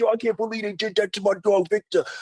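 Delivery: mock angry, very high-pitched ranting delivery. Retelling a friend's reaction to a show's season finale, mock-angry rant. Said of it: "like he was angry".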